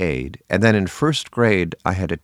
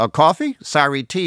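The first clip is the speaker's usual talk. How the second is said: put-on New Jersey accent, pitched a bit high; 8 semitones higher than usual. Retelling a family joke, doing the father's line as a jersey accent impression. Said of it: "That's an imitation of him".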